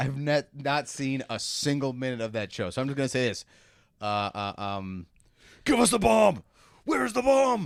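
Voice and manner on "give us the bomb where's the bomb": rough, very high-pitched. Answering a request for an actor impression: Kiefer Sutherland impression. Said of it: "give me your Kiefer Sutherland".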